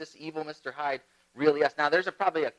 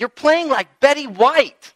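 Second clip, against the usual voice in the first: high, loud, slow yelling. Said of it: "yells at her, saying".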